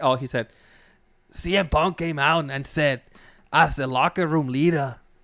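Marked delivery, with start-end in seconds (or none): 1.3-5.0 put-on Scottish accent. Retelling what a wrestler said in a promo: Drew McIntyre Scottish accent. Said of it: "that's enough of that Scottish accent".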